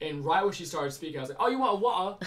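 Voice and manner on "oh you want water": put-on British accent, higher and louder. Retelling mimicking a customer's accent while serving: imitating a British accent. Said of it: "she had a British accent".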